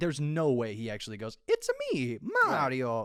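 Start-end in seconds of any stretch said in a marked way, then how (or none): 1.5-3.0 slow, drawn-out character voice with wide swooping pitch. Saying an actor won't do the line: Mario impression. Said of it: "That was a pretty damn good Mario there".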